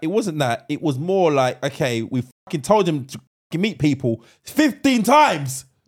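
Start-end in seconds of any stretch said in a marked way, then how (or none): 1.6-5.6 acted heated, fed-up angry outburst, pitch rising. Speaker corrects a co-host's account of an answer, getting angry. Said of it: "Why are you getting angry?".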